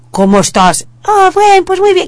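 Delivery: very high voice, slightly modulated. Tip on changing your voice a little for a child: slightly deeper voice. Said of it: "te pones una voz un poco más grave".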